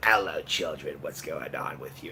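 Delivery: very deep, very low, bottom-of-the-range voice. Imitating how his voice sounded before the last video: Harvey Fierstein voice. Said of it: "I sound like Harvey Fierstein".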